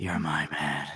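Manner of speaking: very low, drowsy, sleepy half-whisper. Imagining what he half-whispers to himself as he goes to sleep, imitating someone half-whispering in sleep. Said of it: "goes to sleep whispering like".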